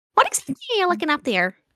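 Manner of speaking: tiny, high, feather-light little creature voice. A small clawed creature climbs onto someone's shoulder and speaks in their ear, very light little voice. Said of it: "the sound of this very like light voice".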